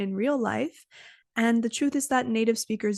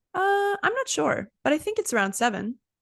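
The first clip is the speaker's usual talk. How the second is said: calm, clear, assured, confident tone; 6 semitones higher than usual. Showing how a confident speaker answers: calm, confident, clear tone. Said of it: "calm, confident, and clear tone of voice".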